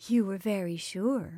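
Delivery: soft-voiced. A woman answers the prince, softly. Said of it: "she said softly".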